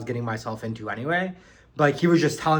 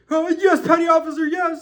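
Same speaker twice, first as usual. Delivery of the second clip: put-on panic, much higher, slower; 5 dB louder than usual. Retelling recruits answering a yelling petty officer on a bus, imitating panicked recruits. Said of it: "we're like freaking out".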